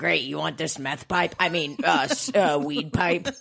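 pushy, salesy store clerk voice. Joking about what the store lady would offer: imitating the store lady. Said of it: "She's like".

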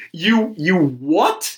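stunned, angry voice with drawn-out delivery. Retelling a camping trip, imitating an angry dad. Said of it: "Dad's pissed".

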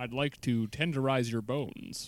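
put-on smooth ad-man announcer voice. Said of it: "starting to slip into the Don Draper".

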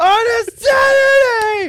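mock yelling. Reading a review aloud, acting out its ending: acting out a written yell. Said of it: "She yelled that last part out".

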